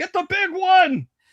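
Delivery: very high, shrill battle yell. Voicing enemies yelling as their comrades fall: shouting in character. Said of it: "they're yelling".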